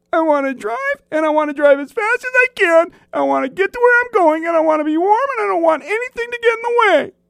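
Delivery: very high-pitched, pushy, entitled insistent tone. Describing what Turn is like by speaking as him, imitating Turn. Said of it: "that's a pretty good imitation of Turn".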